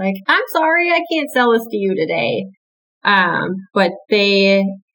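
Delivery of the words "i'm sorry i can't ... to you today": polite, pitched-up customer service voice. Showing how a gun sale is refused to a customer, polite customer service voice. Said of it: "nicely in my customer service voice".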